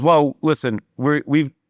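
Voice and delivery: plain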